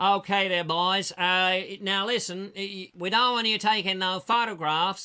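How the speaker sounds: loud, put-on dummy American accent. Retelling what people outside the building told the boys, in a dummy American accent. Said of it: "And this is a dummy accent".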